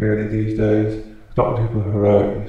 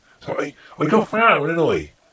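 put-on farmer accent, much higher; 6 semitones higher than usual. Demonstrating that accents can be put on, the speaker does a put-on farmer accent. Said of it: "That's farmer, isn't it?".

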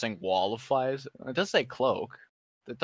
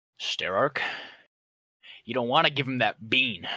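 extremely menacing, threatening voice. In a tabletop game, warning another character about the bean, menacing. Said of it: "Saying it as menacingly as I can".

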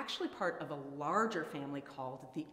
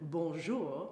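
exaggerated, outrageous, over-the-top French accent. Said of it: "if you spoke in an outrageous French accent and said".

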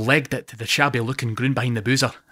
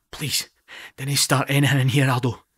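stage half-whisper, pleading tone. Narrator reads a speaker turning to a friend who called the barman: half-whispering. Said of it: "I whisper to him".

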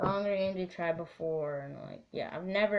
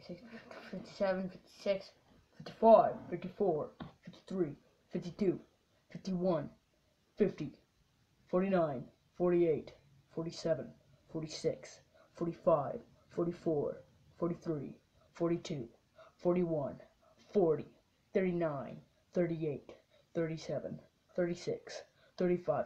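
put-on rocket-launch countdown voice. Counting down for a trip in a rocket, in a countdown voice. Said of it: "Do you guys like my countdown voice?".

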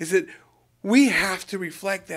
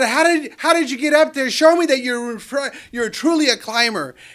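mock yelling, high and loud; 6 semitones higher, 6 dB louder than usual. Telling a story of a climber calling up a mountain: yelling out. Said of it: "he yells out".

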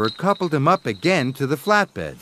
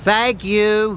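wheezing, much higher; 4 semitones higher than usual. An engine replies to another engine at the repairers, wheezing. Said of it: "wheezed Skarloey".

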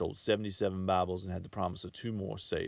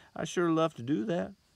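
sheepish, abashed, very high-pitched; 10 semitones higher, 4 dB louder than usual. Reading a man's reply to a woman's dinner invitation, abashed. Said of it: "he said in an abashed voice".

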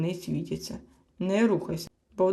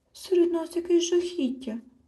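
very high, frightened, fearful babbling mumble; 11 semitones higher than usual. Narrator reads a character hiding under a blanket at night, frightened murmur. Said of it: "жебоніла злякано з-під ковдри Хропця".

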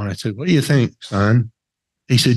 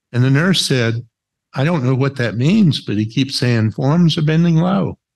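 usual speaking voice

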